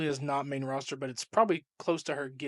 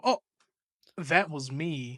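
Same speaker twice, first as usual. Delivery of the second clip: put-on mocking voice. Retelling a wrestling promo where Lyra clapped back: imitating Lyra clapping back. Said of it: "Lyra came out and clapped back at her and then was like".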